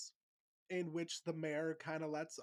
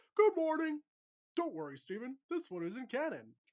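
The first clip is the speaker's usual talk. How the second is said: squeezed, high, bouncy, swooping, animated cartoon voice; 9 semitones higher, 8 dB louder than usual. Speaker shows off the voice they say they do well: Uncle Grandpa voice. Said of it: "how good of an Uncle Grandpa voice I can do".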